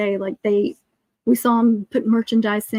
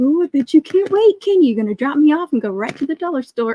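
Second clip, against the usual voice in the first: put-on thick sarcasm, high-pitched and swooping, teasing; 5 semitones higher, 4 dB louder than usual. Retelling what she said this morning: imitating her sarcastic remark. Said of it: "That one has the sarcasm thick".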